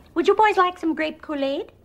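put-on very high-pitched voice with Minnesota accent vowels. Imagining her in Fargo, the speaker does an Edie McClurg impression. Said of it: "Edie McClurg isn't part of the Fargo verse".

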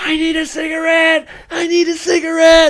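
unhinged, high-pitched, drawn-out screaming. Retelling how he lost it and screamed at nobody: retelling a scream. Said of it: "He just starts screaming at nobody".

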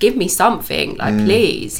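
mock-frustrated, begging tone. Recalling the long wait for a diagnosis, retelling a frustrated plea. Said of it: "I was so frustrated because I was just like".

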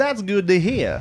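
put-on accent of the American South. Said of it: "Why did you do a Southern accent?".

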